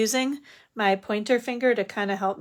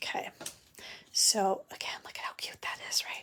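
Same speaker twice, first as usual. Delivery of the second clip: soft, breathy, very quiet whisper; 10 dB quieter than usual. Putting dimensionals back on and pointing out how cute it is, whispering. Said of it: "I'm not sure why I'm whispering".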